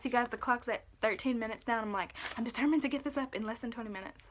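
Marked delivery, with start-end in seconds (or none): 2.4-4.3 speaking really fast, rattled off and hurried. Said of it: "sorry if I'm speaking really fast".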